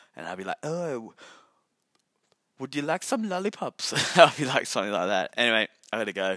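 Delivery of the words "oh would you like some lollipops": slow, high, put-on Sri Lankan accent. Imagining running a convenience shop, the speaker talks in a fake Sri Lankan accent. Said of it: "I'll put a fake accent too".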